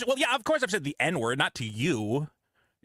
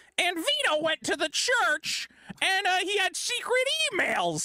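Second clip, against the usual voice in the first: very high, slow, scornful mocking put-on voice. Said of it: "He made a whole video going".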